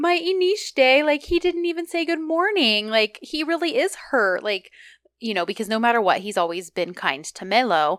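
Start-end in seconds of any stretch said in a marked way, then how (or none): 0.0-4.4 high, drawn-out voice of dismayed disbelief. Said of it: "Melo is like".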